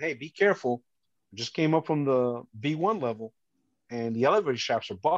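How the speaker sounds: ordinary talk, nothing marked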